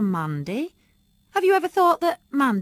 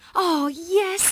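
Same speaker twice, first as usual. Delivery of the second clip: high, delighted, eager, joyful exclamation; 8 semitones higher than usual. The narrator replies during a family conversation, joyfully. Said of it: "I said joyfully".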